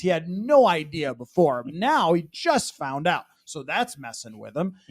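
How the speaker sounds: sarcastic delivery. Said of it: "That sounded sarcastic".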